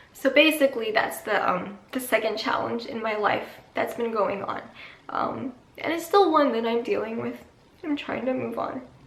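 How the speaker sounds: crying through the words, tearful, voice breaking. Speaking to you guys on here, crying. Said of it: "I can't stop crying".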